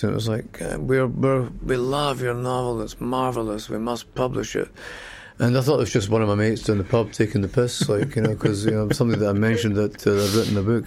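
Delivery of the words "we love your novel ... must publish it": put-on slow, upper-class Scottish accent. Retelling a publisher's voicemail about his novel, posh Scottish accent. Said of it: "It was like this posh Scottish voice".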